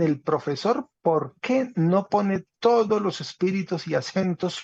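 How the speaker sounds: ordinary talk, nothing marked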